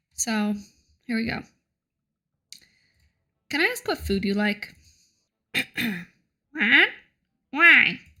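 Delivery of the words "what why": put-on goblin voice, high and loud. Asked what food it likes, answering in a goblin voice. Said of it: "that's my goblin voice".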